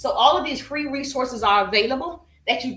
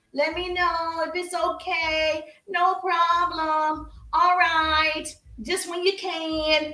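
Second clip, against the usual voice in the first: very slow, dragging, pitched-up, can stretched out; 5 semitones higher than usual. Showing learners how not to talk on a sales call: slow dragging speech. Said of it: "You're not talking slow like a turtle".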